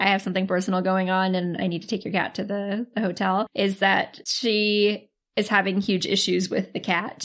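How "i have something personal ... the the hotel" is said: usual speaking voice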